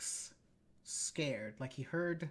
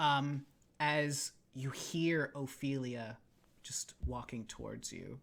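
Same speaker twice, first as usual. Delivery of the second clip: ordinary talk, nothing marked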